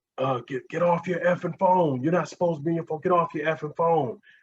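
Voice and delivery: high-pitched ranting yell. Retelling how another cop on the scene went off: imitating a cop yelling. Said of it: "I just remember him just yelling".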